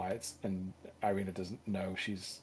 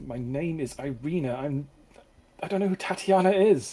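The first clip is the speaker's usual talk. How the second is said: loud, high-pitched, ground out through gritted teeth; 7 semitones higher, 12 dB louder than usual. Telling the story, the narrator voices the woman called Tatiana: Irina through gritted teeth. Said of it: "says through gritted teeth".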